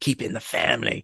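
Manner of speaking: attempted Cockney accent. Joking that a family topic sounds like EastEnders, in an attempted East End London accent. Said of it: "that was an attempt at an East End London accent".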